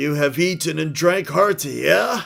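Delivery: put-on loud, high-pitched troll character voice. Storyteller voices a troll addressing the gathered crowd of trolls, troll voice. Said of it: "It is a troll voice after all".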